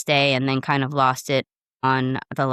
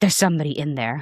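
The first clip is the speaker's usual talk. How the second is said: acted annoyed, put-out, irritated brush-off. Retelling a man's reply when the speaker asked if it was open, mock-irritated man. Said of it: "like all irritated".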